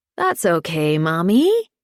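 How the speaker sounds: exaggerated, over-the-top baby talk voice. Handing the baby daughter over to her mother, answering in an over-the-top baby voice. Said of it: "in an over-the-top baby voice says".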